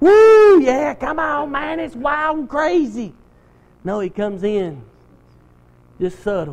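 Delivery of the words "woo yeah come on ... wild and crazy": mock rowdy, wild party-animal whoop. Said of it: "banging cymbals and drums and throwing parties".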